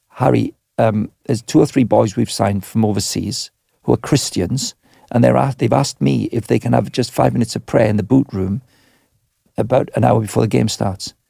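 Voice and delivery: ordinary delivery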